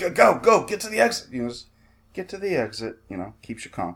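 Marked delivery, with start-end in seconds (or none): 0.0-2.6 put-on agitated yell, much higher. Contrasting a soothing guide with a panicky one, imitating an agitated yell. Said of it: "someone who's like really agitated".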